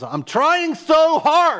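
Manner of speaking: mock, very high-pitched, very slow, wailing sobbing scream. Recalling punching the steering wheel in the car, re-enacting screaming and crying. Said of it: "and I'm screaming and crying".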